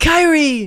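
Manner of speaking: very high, shrill, loud shouted name. Imitating how he says her name every time: shouted Haley Joel Osment voice. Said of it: "He's shouting it in because, the Haley Joel Osment voice. Every time he says her name, that's how he says it".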